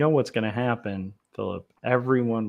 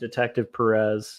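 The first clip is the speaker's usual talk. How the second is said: normal talking voice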